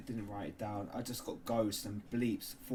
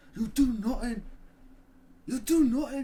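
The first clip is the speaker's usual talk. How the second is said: very high, very loud, shrill put-on Irish accent; 13 dB louder than usual. Retelling how colleagues on a tour kept repeating a phrase, in a bad irish accent. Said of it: "That's a very bad Irish, Irish accent".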